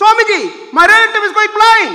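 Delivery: very loud, high-pitched, loudest possible shout. Retelling a disciple calling out a third time, retelling a call in the loudest voice. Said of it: "in the loudest voice".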